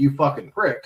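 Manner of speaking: put-on mock-sarcastic tone.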